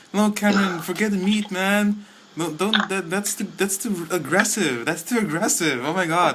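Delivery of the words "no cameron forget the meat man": high, wheedling, coaxing persuader voice. Acting out vegetarian friends urging Cameron to eat grass: imitating vegetarian friends. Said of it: "those are your friends".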